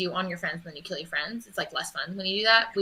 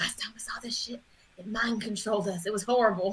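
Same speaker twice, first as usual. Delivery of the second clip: urgent, feverish whispering, quieter; 2 semitones higher, 5 dB quieter than usual. Whispering to Dirk while trying to pull him away: feverish whisper. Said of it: "whispering feverishly to Dirk".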